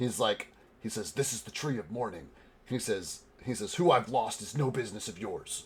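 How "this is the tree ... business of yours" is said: theatrical stage whisper. Retelling what a startled man turns and says to you, in a stage whisper. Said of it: "in like a stage whisper".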